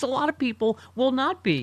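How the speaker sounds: mild yell. A host rants before taking a caller: screaming. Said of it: "Sorry, I'm screaming".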